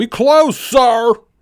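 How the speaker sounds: mock very high, loud, blaring bellow. Retelling a lady at Walmart who bellows at him, retelling her bellow. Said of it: "she just bellows out at me".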